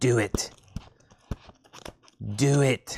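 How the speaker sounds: put-on sinister villain voice. Imitating viewers urging a vinyl order: Emperor Palpatine voice. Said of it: "Like Emperor Palpatine".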